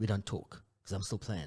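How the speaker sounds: put-on American accent. Quoting a remark from a podcast interview in an american accent. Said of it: "look at you with the American accent".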